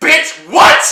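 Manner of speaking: very high, shrill, loud shout. Retelling a woman yelling from the back of a theater: imitating a woman yelling loudly. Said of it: "yells out as loud as she can".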